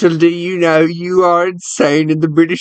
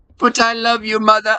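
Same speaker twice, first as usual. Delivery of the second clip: put-on, pitched-up British accent; 5 semitones higher, 3 dB quieter than usual. Playing the son pleading with his mother, in a british accent. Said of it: "you're some British lad".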